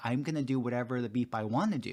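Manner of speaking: ordinary delivery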